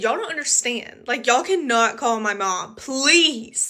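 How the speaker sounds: acted, urgent, hard pleading, begging voice. Retelling asking police not to call parents: retelling own begging. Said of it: "And I was begging".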